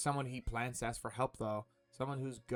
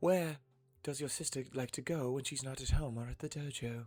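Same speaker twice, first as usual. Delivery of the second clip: put-on British accent. Questioning another player about their sister, in a British accent. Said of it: "I'm gonna give her a British accent".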